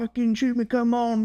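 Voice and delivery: big, high-pitched tough-guy voice, taunting. Retelling a fleeing suspect daring an officer to shoot: imitating big tough talk. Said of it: "the big tough talk".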